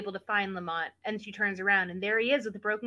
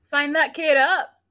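very loud, pitched-up declaiming, belted out high; 6 semitones higher, 12 dB louder than usual. Commenting on a movie scene in a put-on voice: Jeff Probst voice. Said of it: "That's my Jeff Probst voice".

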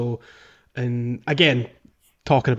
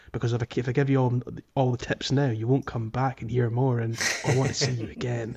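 quiet whisper, as if to oneself. Retelling a game character's aside, imitating someone whispering to herself. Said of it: "she's whispering to herself".

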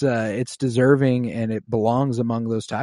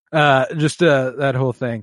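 ordinary talk, nothing marked

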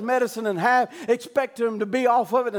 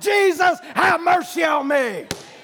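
put-on screaming, higher pitch; 5 semitones higher, 3 dB louder than usual. Retelling how a blind man begged Jesus: retelling a scream for mercy. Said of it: "he's screaming out".

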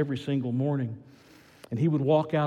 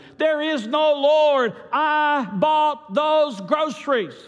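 full, very high, shrill yell; 14 semitones higher, 7 dB louder than usual. Telling a joke, voicing the atheist jumping out from behind the hedges, shouting. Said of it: "he shouted".

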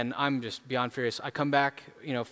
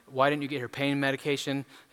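ordinary talk

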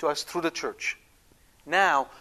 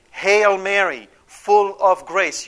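strong, raised, slow, emphatic voice; 3 semitones higher, 8 dB louder than usual. Showing how to proclaim the Hail Mary as on a field of war: raised voice. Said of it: "You raise your voice when you say it".

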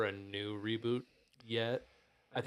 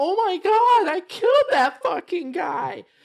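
shrill, very loud, dragged-out cry of shock; 15 dB louder than usual. Retelling the character's reaction after her first kill: imitating Lara shocked after a kill. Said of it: "she has a reaction. She's like".

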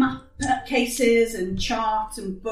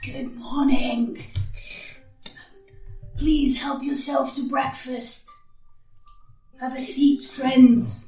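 dry, rasping, parched voice; 3 semitones higher than usual. Game master voices a figure by the fire greeting the party: dry, raspy voice. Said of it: "in a dry, raspy voice, greets you".

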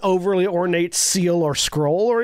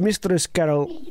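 put-on unintended slip into a Russian accent. Voicing a character addressing a player, slipping into a Russian accent. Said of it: "that's the wrong accent. I just went Russian".

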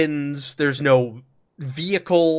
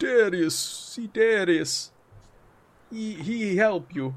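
high-pitched, simple broken-Hungarian phrasing; 5 semitones higher, 5 dB quieter than usual. Retelling a man pointing to the village center: broken Hungarian. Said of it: "he'll speak broken Hungarian to you".

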